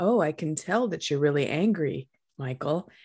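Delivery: calm, steady classroom teacher voice. Speaker retelling talking to an upset child, in a put-on calm teacher voice. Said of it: "calm teacher voice".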